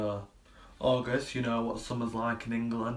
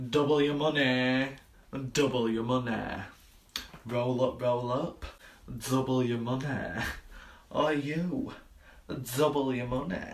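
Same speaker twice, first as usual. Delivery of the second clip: normal talking voice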